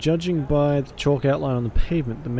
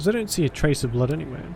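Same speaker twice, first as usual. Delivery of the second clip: ordinary talk, nothing marked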